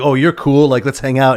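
ordinary delivery

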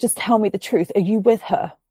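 put-on weepy, tearful begging through sobs. Retelling a tipsy late-night phone call: imitating someone crying. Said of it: "she basically starts crying".

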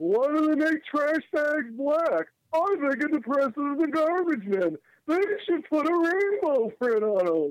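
high-pitched, wry stand-up comedian delivery. Mocking a disliked show with an impression of its comedian: Jerry Seinfeld impression. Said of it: "here's my Seinfeld impersonation for you".

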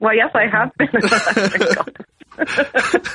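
slow delivery with laughter running through.

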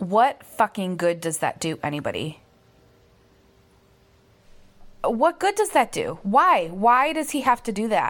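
angry, mad tone. Sounding off about what a leader keeps saying: angry. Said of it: "I'm so mad".

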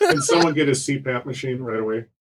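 plain, matter-of-fact delivery. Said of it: "you just said it so matter-of-factly".

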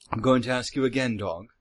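put-on evil, villainous British accent. Threatening a captured berserker in character: evil British accent. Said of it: "affect the equivalent of the British accent for evil".

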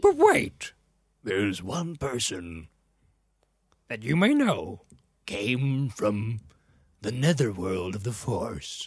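slow, deliberate, mentor-like, drawn-out phrases. Retelling a film scene where one master speaks: imitating Yoda. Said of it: "And Yoda's like".

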